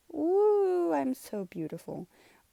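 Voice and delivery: high, sing-song, sarcastic mock-vain gushing, "woo" stretched long. Showing a drawing of own face: put-on sarcastic self-praise.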